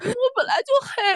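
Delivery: put-on very high voice choking on sobs. Recalling crying over face makeup that looked too dark, retelling choked-up words. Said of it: "然后我就是哽咽着说。".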